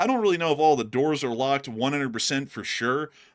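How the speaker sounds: ordinary delivery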